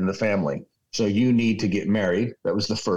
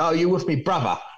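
put-on English accent, higher; 7 semitones higher than usual. Quoting a kid who speaks up behind a first-year student, in an English accent. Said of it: "with this English accent".

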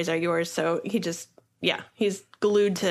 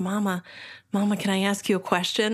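put-on tiny child's voice. Retelling a young son asking his mother a question: imitating a tiny child's voice. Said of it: "you hear this little t-, tiny voice".

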